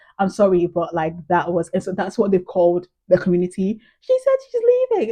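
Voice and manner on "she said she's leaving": very high-pitched, tearful crying voice. Retelling what an emotional man in tears told two people, in a really high-pitched voice. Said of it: "in a really high pitched voice".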